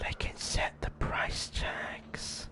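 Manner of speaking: eerie, creepy, hushed, breathy whisper. Explaining player vending machines to another speaker, creepy whisper. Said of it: "You did not have to whisper like that".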